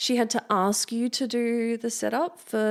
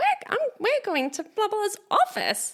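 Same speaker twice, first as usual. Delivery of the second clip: mock cheery smiling voice, higher pitch; 12 semitones higher than usual. Retelling how she sounded when calling a sit-down: imitating someone cheery and smiley. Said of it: "That's how she sounded".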